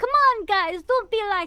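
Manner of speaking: loud, high, put-on Italian accent. Telling what they do when called a name they don't go by: Italian accent. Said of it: "If I start acting Italian".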